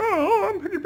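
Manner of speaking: very high voice from the back of the throat. Describing voices done for a character called Piggy P, Miss Piggy voice, back of throat. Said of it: "It was kind of in the back of my throat".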